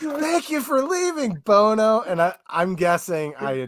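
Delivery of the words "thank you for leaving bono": acted-out very high, shrill, full-out loud shout. Retelling what someone yelled at the end of a match: imitating someone yelling. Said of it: "they literally yelled".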